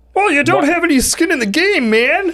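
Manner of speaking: very high, cartoonish frog-puppet voice. Voicing a realtor during a talk about VA loans, Kermit the Frog voice. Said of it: "that's my best Kermit the Frog realtor impression".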